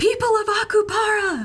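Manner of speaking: full-volume, booming yell, pitched very high. Player's character on the balcony calls out to draw attention, yelling as loud as possible. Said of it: "as loud as I can".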